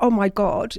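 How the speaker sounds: acted terrified reaction. Retelling a young woman's reaction after escaping: imitating someone terrified.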